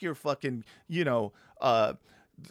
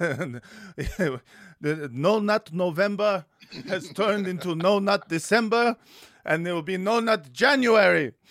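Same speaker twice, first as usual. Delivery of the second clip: put-on slipping into Yiddish accent; 4 semitones higher, 3 dB louder than usual. Voicing a group's charter as a joke, slipping into a Yiddish-sounding accent. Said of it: "you're making them sound Yiddish".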